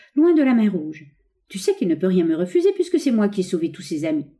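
plain

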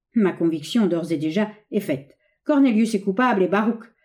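plain

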